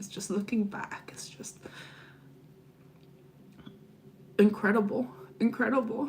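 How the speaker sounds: emotional, tearful voice, crying through the words. Speaker looking back on an experience she is grateful for, crying. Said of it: "I'm crying now".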